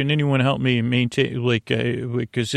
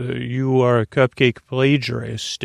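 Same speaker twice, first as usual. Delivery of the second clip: put-on robotic, machine-like voice. Retelling an announcement made during a presentation, in a robotic voice. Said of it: "it was this robotic voice that said".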